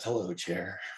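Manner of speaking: hushed mutter under the breath. Retelling grandpa greeting his chair on coming home: imitating a half-whispered line. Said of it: "he whispered under his breath".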